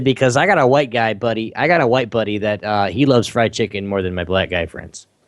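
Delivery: plain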